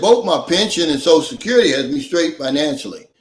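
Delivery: plain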